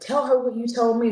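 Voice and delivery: insistent shouting. Recounting a phone call with their dad heard in the background: imitating their dad yelling. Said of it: "he's yelling and screaming again".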